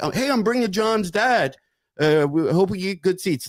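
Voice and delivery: offhand, easygoing delivery. Retelling how a caller asked a comedy club for seats: imitating a meek, undemanding request. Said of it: "almost not demanding".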